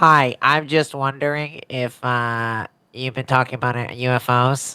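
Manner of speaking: slow, pinched, nose-plugged nasal voice. Imitating Chris Cuomo with his nose plugged asking a question, Chris Cuomo with nose plugged. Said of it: "it just sounds like Chris Cuomo with his nose plugged. Like".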